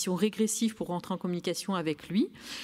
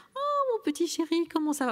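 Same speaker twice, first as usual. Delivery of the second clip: put-on very high sing-song baby talk; 11 semitones higher than usual. Demonstrating the way adults speak to a child, in sing-song baby talk. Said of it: "vous entendez cette petite intonation".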